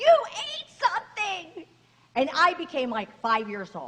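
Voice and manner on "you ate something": put-on, shrill, very high, sudden furious angry shriek. Retelling a doctor's angry outburst during a colonoscopy: imitating a doctor screaming. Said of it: "all of a sudden he screams".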